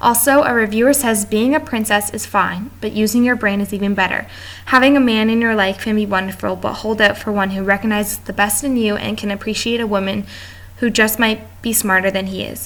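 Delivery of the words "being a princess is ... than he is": normal talking voice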